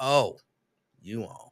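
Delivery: unenthusiastic, with no joy at all. Rereading a greeting to show how it came across: not joyful. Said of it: "that didn't sound like joyful. That sounded like".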